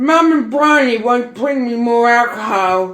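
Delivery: put-on loud, slurring drunk speech. Retelling what the other speaker said while drunk: imitating drunk slurring. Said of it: "slurring at me at the door".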